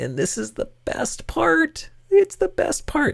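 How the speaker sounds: sarcastic, pitched way up high. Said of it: "yes, I'm being sarcastic".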